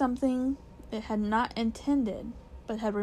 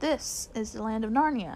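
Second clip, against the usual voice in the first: plain reading voice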